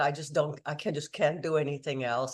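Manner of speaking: ordinary talk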